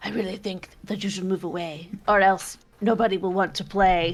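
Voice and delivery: scary, raspy, devilish voice with rasping undertone. Voicing a tiefling's spell whispering in a mind: raspy devilish voice. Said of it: "raspy kind of, like, devilish undertone".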